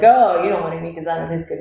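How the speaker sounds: plain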